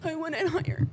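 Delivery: very loud, high-pitched yelling. Interrupting the conversation with the other speaker, yelling. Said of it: "I didn't mean to yell at you".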